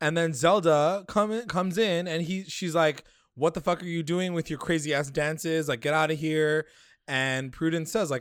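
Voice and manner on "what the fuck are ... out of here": acted, scolding, yelling outburst. Retelling a show scene of someone scolding a ritual dance: imitating someone yelling. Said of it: "so don't yell at her".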